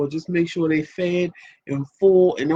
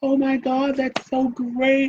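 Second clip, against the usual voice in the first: put-on gushing excitement, higher pitch; 8 semitones higher than usual.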